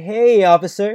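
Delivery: acted, trembling, nervous, shaky voice, drawn-out "hey". Pulled-over driver answering a police officer, shaky. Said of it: "I respond with a shaky".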